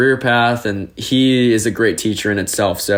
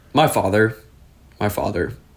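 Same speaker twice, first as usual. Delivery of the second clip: moved, heartfelt, getting emotional. Asked what gave them the spark for teaching, answering: emotional. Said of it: "you're getting me emotional on a Sunday afternoon".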